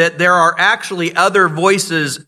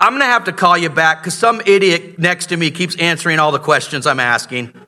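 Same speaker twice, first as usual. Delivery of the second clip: plain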